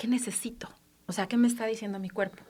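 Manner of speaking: soft, unvoiced whisper.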